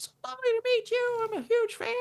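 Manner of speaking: put-on very high, jovial, sweet Southern accent squeak. Retelling a welcome phone call: horrible Vince Gilligan impression. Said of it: "This is my horrible impression of him".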